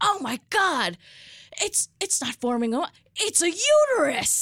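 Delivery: mock shriek, very high and slowly drawn out. Retelling what a woman said, the speaker is imitating someone screaming. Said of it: "she just screams".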